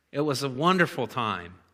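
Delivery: wry, dry, ironic sarcastic delivery. Recalling debt collectors' calls after the foreclosure, sarcastic. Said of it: "I'm being a little sarcastic".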